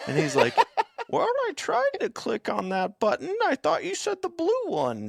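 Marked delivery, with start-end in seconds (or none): 1.1-5.1 put-on very high, swooping little old lady voice. Retelling a bit someone does, in an old lady voice. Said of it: "he has like the old lady voice down so well".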